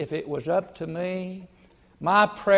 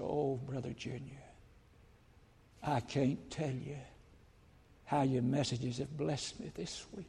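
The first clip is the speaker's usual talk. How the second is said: put-on trembling, quavering voice, much quieter; 5 semitones lower, 15 dB quieter than usual. A preacher retells what a widow said to him, imitating her trembling voice. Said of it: "with a little trembling voice".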